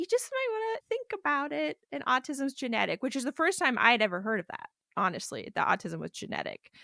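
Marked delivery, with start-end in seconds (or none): 0.0-3.0 kind, very gentle, pitched-up voice. Retelling what a therapist once said: imitating someone speaking very gently. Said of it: "she just very gently was like".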